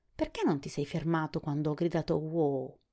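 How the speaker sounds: plain reading voice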